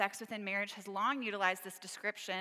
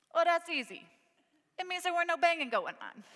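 put-on heavy New York Italian accent; 9 semitones higher, 6 dB louder than usual. Retelling a kid piping up from his bunk, thick New York Italian accent. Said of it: "said in his thick New York Italian accent".

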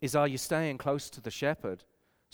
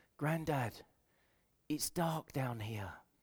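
small, tiny hushed voice; 8 dB quieter than usual. Grandfather recalling his grandson calling up from the basement, little tiny voice. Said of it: "I heard this little tiny voice".

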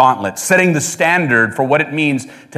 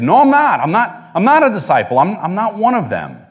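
put-on child voice, pitched much higher; 6 semitones higher than usual. Speaker retells Peter's denial, voicing Peter like a kid. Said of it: "like a kid".

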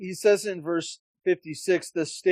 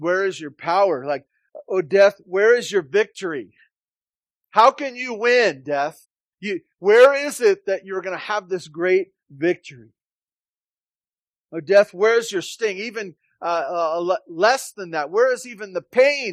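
loud, mocking, jeering taunt; 3 semitones higher, 6 dB louder than usual. Preaching on a verse, acting out its speaker addressing death, acting out a taunt. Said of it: "it's this taunting kind of thing".

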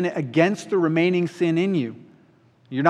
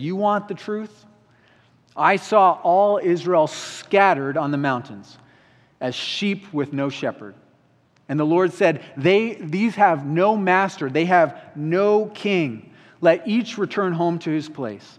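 usual speaking voice

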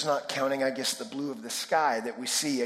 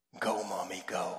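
hushed, half-whispered little cheer under the breath; 7 semitones lower, 6 dB quieter than usual. Retelling a story of a son cheering on his mother: imitating a child half-whispering. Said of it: "whisper under his breath".

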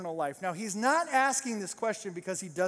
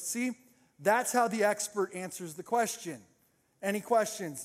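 normal talking voice

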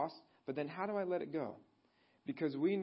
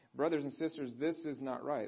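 usual speaking voice

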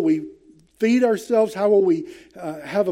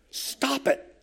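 stern, angry, whispered rebuke; 6 semitones higher, 9 dB quieter than usual. Reading a command as if the Lord shouts it: the Lord shouting angrily. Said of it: "We can read it as he's shouting it at us".

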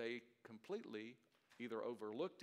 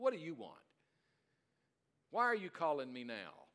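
mock sarcastic, loud voice with swooping pitch; 5 semitones higher, 7 dB louder than usual. Retelling how a brother answered the phone: imitating brother's sarcastic answer. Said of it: "that kind of sarcasm".

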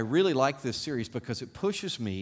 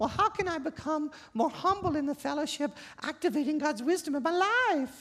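put-on very high, childlike, girlish little-girl voice. The speaker voices the listener's imagined question in a little girl voice. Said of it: "in your little girl voice".

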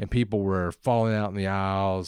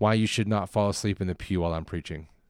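ordinary delivery

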